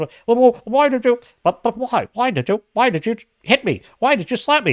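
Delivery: put-on very high mumbling voice. Retelling a movie scene after the slap: Peter Pan mumbling. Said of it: "he's mumbling something about".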